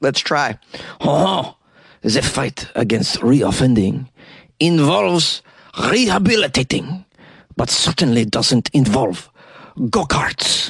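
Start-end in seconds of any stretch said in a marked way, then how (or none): 1.0-10.7 slow, clumsy, amateur put-on French accent. Reading out a quote from the French justice minister: French accent. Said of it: "He's probably got a French accent".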